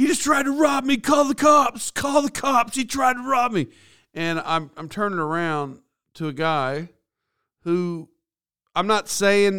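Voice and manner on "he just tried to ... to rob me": put-on very high, shrill screaming yell. Retelling what a man on the street screamed: imitating someone screaming. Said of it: "I hear screaming and saying".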